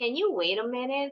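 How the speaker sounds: pitch rises at the end on minute. Teaching yes-no question intonation, rising intonation at the end. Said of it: "we have to use the rising intonation".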